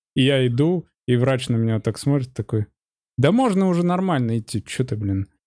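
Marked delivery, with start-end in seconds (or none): 3.1-5.2 annoyed, exasperated, irritated scolding tone. Retelling what the doctor said as the speaker walked into the office, retelling an irritated doctor. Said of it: "Прям такой раздраженный".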